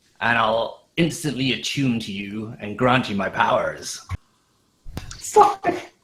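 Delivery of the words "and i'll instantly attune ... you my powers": put-on pirate crab voice, quieter. Voicing the Trident after the others compare it: Mister Krabs voice. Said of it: "It's Mister Krabs, the Trident".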